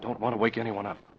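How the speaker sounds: whispered voice. Speaking on the phone at night, not wanting to wake anyone: whispering. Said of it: "I've got to whisper".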